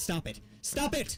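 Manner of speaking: put-on yelling. Retelling yelling at her to stop clawing his back: imitating own yell. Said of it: "eventually I yelled".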